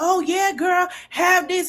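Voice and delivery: mock, high, cheerleader-style cheering-on hype. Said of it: "the way that they cheering it on".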